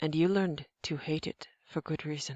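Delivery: plain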